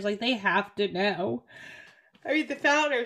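words pushed out mid-yawn. Speaker discussing the founders of a scam apologizes mid-sentence; yawning. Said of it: "sorry I'm yawning".

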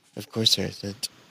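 faint, hushed whisper under the breath. Acting out a hidden voice answering a traveler: whispering. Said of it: "you just hear a whisper".

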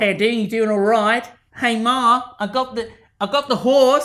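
fake Australian accent. Imagining what a man on a phone call is saying, in a bad australian accent. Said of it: "That's some bad accents".

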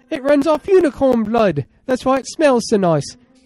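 put-on bad British accent. Answering another speaker's question about a flying car's missing wings, in a bad British accent. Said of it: "it's a bad british accent".

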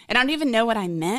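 ordinary delivery

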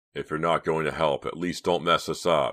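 ordinary delivery, nothing marked

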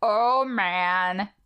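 cow voice impression. Doing a favorite impression from the episode: impression of the cow. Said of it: "I'm gonna go first for my impression".

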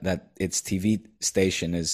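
ordinary delivery

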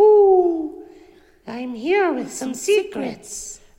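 ooh drawn out and kept high. Voicing the secret owl character to the audience, in the secret owl voice. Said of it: "me behind the voice of the secret owl".

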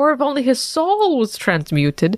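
ordinary delivery

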